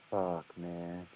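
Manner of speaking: very low, hushed, flat monotone mutter. Retelling their own reaction when a dude came out, in a low monotone voice. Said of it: "I've never said fuck lo- in like a more like monotone, lower voice".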